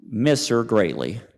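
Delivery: ordinary delivery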